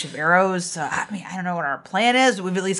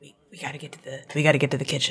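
hushed, stumbling half-whispered delivery; 3 semitones lower than usual. Voicing a character who walks over to another character: half-whispering. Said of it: "whispers to her".

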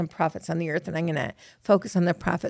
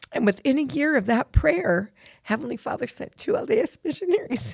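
on the verge of tears, pitched-up voice; 6 semitones higher than usual. Sharing a personal story, the speaker is about to cry. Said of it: "Sorry, I'm going to cry".

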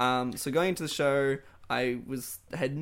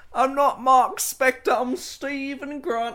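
put-on British accent, much higher pitch; 12 semitones higher, 9 dB louder than usual. Quoting the character's lines, in a Stephen Grant British accent. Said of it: "He's doing his little British voice".

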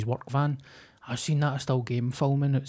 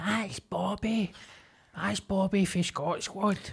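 mock full-volume, high-pitched street shout; 7 semitones higher, 4 dB quieter than usual. Retelling how someone in public called out at full volume: imitating someone shouting. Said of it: "pretty full volume".

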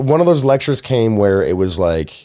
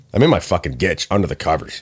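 usual speaking voice

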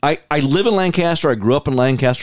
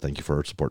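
put-on hushed murmur, lower and quieter; 9 semitones lower, 11 dB quieter than usual. Retelling what the barista said when handing over the coffee: imitating someone speaking under her breath. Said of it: "Under her breath said".

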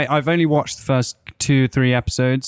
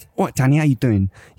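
put-on South London accent. Playing Jack in a skit while the other speaker plays Danny. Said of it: "Do an impression of Jack".

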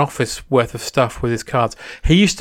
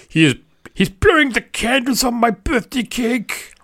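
put-on Austrian accent, much higher and slower; 9 semitones higher than usual. Telling a birthday candle story, doing the man's line as an Arnie impression. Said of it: "That's the best Arnie impression I've ever heard".

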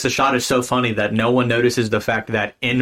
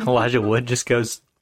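usual speaking voice

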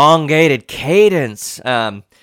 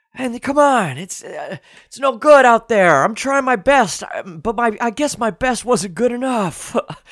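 deeper, breathy imitated voice; 9 semitones higher than usual. Show how you do several voices, ending with a breathy, lower Joe Biden impression. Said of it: "It's kind of lower, more breathy".

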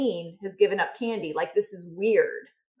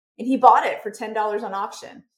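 normal talking voice

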